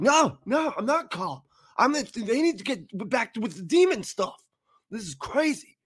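mock very high, worked-up, angry shouting. Retelling how a pastor angrily called out other pastors: imitating someone shouting angrily. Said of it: "shouting about it almost".

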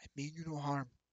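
soft, gentle, soothing, calming tone. A character raising empty hands to calm a man down, in a low, soft calming tone. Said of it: "Speaking in low, soft tone".

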